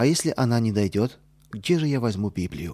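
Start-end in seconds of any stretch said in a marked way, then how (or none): none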